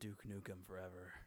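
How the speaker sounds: ASMR-style talking. Told he's being too loud, promising to be quiet: serious ASMR-style voice. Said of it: "I'm just gonna talk like A S M R, serious voice".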